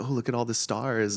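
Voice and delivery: thrilled, excited exclamation. Recalling first arriving in Hollywood, retelling own past excitement. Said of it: "I was like excited. I was like".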